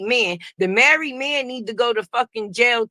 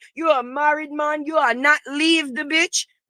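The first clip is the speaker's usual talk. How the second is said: put-on Jamaican accent, higher; 3 semitones higher than usual. Acting out a woman's angry plea to a married man: put-on jamaican accent. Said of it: "the situation done gave me a Jamaican accent".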